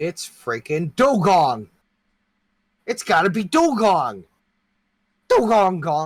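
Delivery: goofy put-on voice, very high and loud. Guessing a Pokémon from its moveset, then shouting its name: silly put-on voice. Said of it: "never let me do that voice again".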